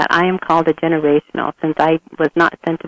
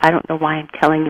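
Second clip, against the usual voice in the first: mock whispering. Retelling what an interviewee said: imitating someone whispering. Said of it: "she was whispering".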